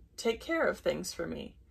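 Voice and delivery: ordinary delivery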